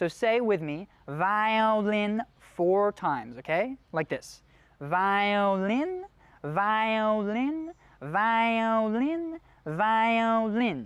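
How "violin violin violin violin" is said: very slow, nasal head voice, drilled. Demonstrating a vocal exercise for listeners to repeat, in a nasal head voice. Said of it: "See how it's got that nasally quality".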